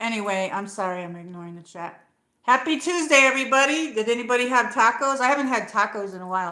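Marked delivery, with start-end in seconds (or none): 2.4-6.5 very loud shouting. A streamer greets everybody in the chat, yelling. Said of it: "Am I yelling?".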